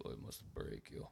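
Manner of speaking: whispered, hushed attempt at deep Russian accent, failing. Trying again despite not having a deep enough voice, in a bad deep russian voice. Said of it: "I don't have a deep enough voice".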